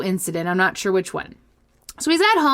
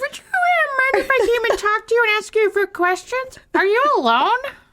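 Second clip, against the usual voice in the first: very high put-on puppet voice; 13 semitones higher than usual. Voicing the caller in a made-up story: Muppet-like put-on voice. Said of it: "You sound like a Muppet".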